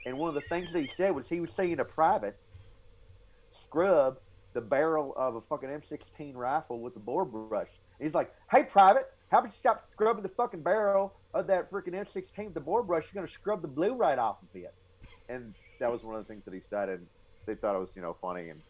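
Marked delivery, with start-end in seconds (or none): 8.5-14.7 put-on very high, loud southern accent with a lisp. Acting out a man telling a private to stop scrubbing, put-on southern accent with lisp. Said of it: "he had like a southern accent, and he would lisp like this".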